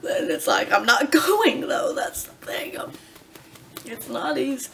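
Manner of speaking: speaking through tears, tearful and crying. Apologizing for crying so much, the speaker talks about pumping while crying. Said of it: "I'm sorry I'm crying so much".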